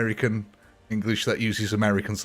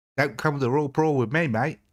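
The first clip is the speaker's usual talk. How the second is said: horrible put-on Australian accent, pitched up; 5 semitones higher than usual. Reacting to a near miss after a poll: bad Australian accent. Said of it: "that's a horrible accent".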